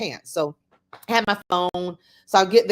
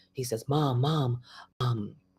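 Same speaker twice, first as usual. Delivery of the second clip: hesitant, halting half-whisper; 7 semitones lower, 8 dB quieter than usual. Mother retelling her son's frightened phone call, imitating her son half-whispering. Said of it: "and he's whispering".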